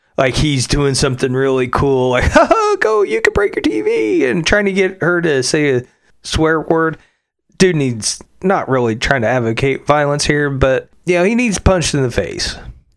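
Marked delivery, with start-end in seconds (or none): 2.3-4.3 very high, gleeful, jovial taunting tone. Describing a man tormenting an 8-year-old girl, mock-jovial taunting. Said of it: "you can hear the jovial nature coming from him".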